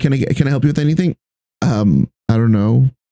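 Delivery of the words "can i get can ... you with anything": put-on, mocking condescending tone. Imitating a worker at the register greeting a customer: imitating a condescending tone. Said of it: "condescending tone".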